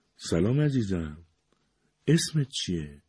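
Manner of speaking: soft, pleasant voice. Narrator reading a character greeting a four-month-old baby, soft and pleasant voice. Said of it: "با صدای آرام و خوشایندی پرسید".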